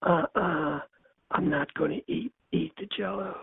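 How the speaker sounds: mild, subdued, soft and quiet. Retelling a couple's exchange, answering her in Hyman's soft voice. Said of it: "And his soft voice".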